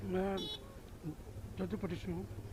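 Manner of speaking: very soft, low murmur.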